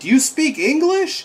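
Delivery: very high-pitched, shrill, put-on shouted yell. Retelling how a man yells at a thing trying to communicate with him: retelling a yell. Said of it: "he yells like".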